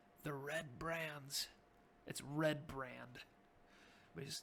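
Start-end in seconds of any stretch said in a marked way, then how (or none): 0.2-1.5 hushed half-whisper under the breath. A character tells the players the gang's name, half-whispering. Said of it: "He whispers again".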